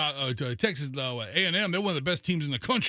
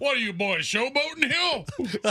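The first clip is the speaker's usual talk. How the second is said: very high, put-on Texas lawman voice; 10 semitones higher, 3 dB louder than usual. Teasing another speaker by playing a Texas cop: put-on Texas cop voice. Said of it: "a Texas cop all of a sudden".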